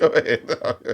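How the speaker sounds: slow delivery, laughing through the words. Telling the other speaker to go ahead: laughing while talking. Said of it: "Why are you laughing?".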